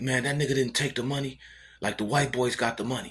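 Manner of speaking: put-on, worked-up, high-pitched mild hollering. Retelling what a man bailing someone out yelled at them: imitating someone yelling. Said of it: "he was yelling at them like".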